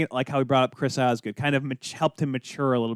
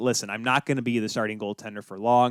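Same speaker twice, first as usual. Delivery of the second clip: ordinary talk, nothing marked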